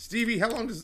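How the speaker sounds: voice cracking, breaking way up, very high. Asking someone how long it takes, voice cracking mid-question. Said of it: "did you hear the voice crack?".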